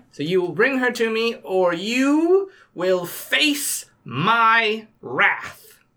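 booming, thunderous, imperious, slow threatening voice, "my" stretched. A disguised character demands that Burien Winterson be brought, thunderously loud threat. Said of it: "I am Perenelle Dubois. I am the maiden, and it's going to shift my form to look like a young woman. The mother, and I'm going to look a little bit older and wiser. And the crone, and I'm going".

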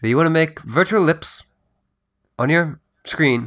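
played-up hushed stage whisper. Teasing the other speaker about the robot: very hushed tone. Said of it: "in a very hushed tone".

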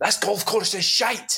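very high, sudden shouted outburst. Retelling a player's sudden outburst walking to the 16th tee, imitating him shouting. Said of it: "he shouted".

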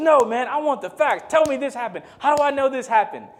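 acted-out very high-pitched, insistent, demanding shouting. Retelling a guy in the dorm demanding facts: imitating someone yelling. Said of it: "started yelling".

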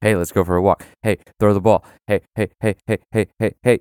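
pestering, yelling, put-on dog voice. Describing an imagined talking dog during a job interview, imitating a yelling dog. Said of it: "yelling at you, and he's like".

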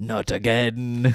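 attempted English accent. Quoting a movie character's serious line: imitating Mark Hamill with an English accent. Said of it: "you gave him an accent".

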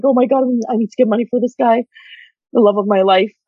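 put-on frantic panic, girls' voices. Describing the women in a documentary: imitating frantic girls. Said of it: "these girls are like frantic".

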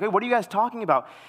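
mock, high, pleading begging voice. Speaker retells asking a group what they were laughing about, mock-begging. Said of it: "I start like begging".

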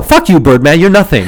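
put-on tough, defiant taunting tone. Playfully putting on a tough, defiant taunt aimed at a rival, not meaning it; mock defiance. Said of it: "mock defiance toward Birdman".

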